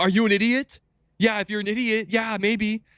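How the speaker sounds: furious, angry ranting radio-host voice, pitched very high. Retelling how an upset radio host answered a caller: imitating an angry radio host. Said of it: "so mad".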